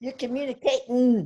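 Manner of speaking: put-on Texas accent. Repeating a man's quoted line, in his Texas accent. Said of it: "Oh, I could".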